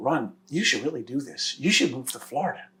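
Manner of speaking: soft, confiding, secretive half-whisper. Retelling her advice to move to Florida: imitating her secretive half-whisper. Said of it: "she has sort of a way of whispering".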